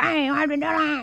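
toothless, gummy speech. Retelling what Rebecca said once her teeth were taken: imitating a toothless gummy voice. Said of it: "she was all gummy".

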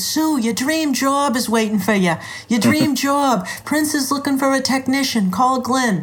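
put-on thick Boston accent. Retelling a phone call from her former boyfriend, doing his thick Boston accent. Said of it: "with his thick Boston accent".

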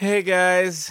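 high, feeble, drained, exhausted little voice. A drenched, exhausted character greets the group with a weak wave: weak, exhausted greeting. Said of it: "gives like a very weak wave".

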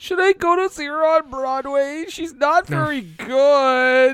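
high-pitched whine with the word "good" stretched out. Presenting an award in a comedy bit: whiny Peter Parker voice. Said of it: "I'm not crying, I'm whining".

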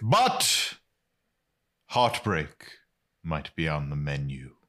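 theatrical, dramatic movie-trailer announcer style reading. Reading a show's episode description aloud after being asked how dramatic: dramatic reading. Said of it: "as dramatic as you feel is necessary".

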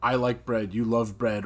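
ordinary delivery

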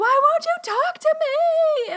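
very high pleading scream with "me" stretched out. Retelling begging the Lord some days, imitating her own screaming.

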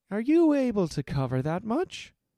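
wary, doubtful tone. A merchant questions a card player about his bet, asking suspiciously. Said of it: "asked Henmar suspiciously".

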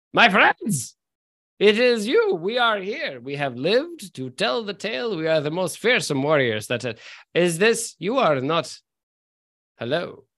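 staggering, unsteady put-on character voice. Voicing a character staggering up from the bar: Rainier Neverember voice. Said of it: "as Rainier Neverember staggers upward and goes".

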